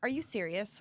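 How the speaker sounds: put-on grumpy tone. Retelling what she said when called yet again, mock-grumpy retelling. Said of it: "She was very grumpy".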